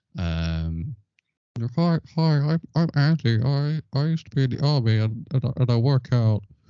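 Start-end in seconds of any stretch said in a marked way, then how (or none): 1.8-6.4 stammering put-on voice, raised and high-pitched. Voicing an absent friend edited in as a stick man: put-on voice playing Andy. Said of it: "Were you imitating his accent as well just now?".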